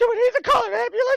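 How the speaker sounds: put-on child yelling. Retelling a fall down the stairs: imitating a child yelling. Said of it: "my child is at the top of the stairs yelling".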